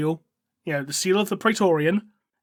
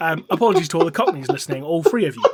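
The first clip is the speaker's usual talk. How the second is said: ordinary talk, nothing marked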